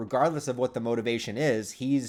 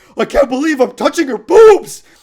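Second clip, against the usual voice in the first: shrill, booming, very loud, high-pitched all-out screaming; 14 semitones higher, 18 dB louder than usual. Imitating how a dubbed character screams a line: imitating Kintaro screaming. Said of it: "the way that he screams".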